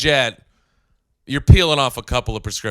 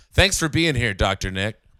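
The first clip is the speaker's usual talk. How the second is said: plain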